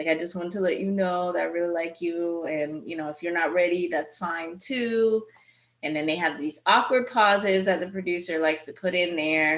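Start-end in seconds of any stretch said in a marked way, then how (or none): 0.1-5.2 choked up, emotion catching in the throat. Retelling a man's confession of feelings on a beach picnic: imitating someone choked up. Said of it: "he was all choked up".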